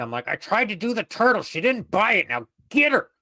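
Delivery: harsh whisper through gritted teeth. Walking past a companion, urging him to go get her; harsh whisper through gritted teeth. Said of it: "harsh whispering as I walk by through gritted teeth".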